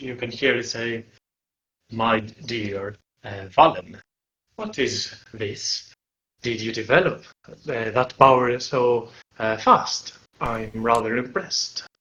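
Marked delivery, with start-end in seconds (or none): 1.9-11.8 deep, sage-like, knowing wise creature voice. Narrating a scene, voicing a creature that speaks in a deep, wise voice. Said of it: "with a deep, wise voice".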